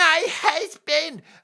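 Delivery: very high, drawn-out mock crying in a grating voice.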